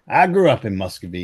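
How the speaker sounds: usual speaking voice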